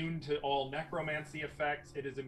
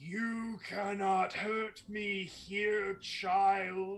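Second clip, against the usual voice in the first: put-on disembodied, high-pitched child voice, drawn out; 5 semitones higher than usual. Narrating a game scene, a voice speaks from the very walls, booming voice from the walls. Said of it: "a voice that seems to boom from the very walls themselves".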